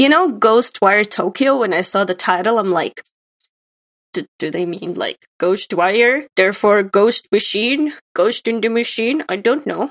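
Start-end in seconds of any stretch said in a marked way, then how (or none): 4.1-9.2 dumb, dopey put-on voice in a musing tone. Recalling seeing the game title, the speaker acts out his own thought in a stupid voice. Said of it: "you gave yourself the stupid voice there".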